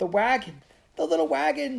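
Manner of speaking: very high, shrill scream. Elizabeth screams over the noise of the flames as the house burns; screaming. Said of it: "screamed Elizabeth over the noise of the flames".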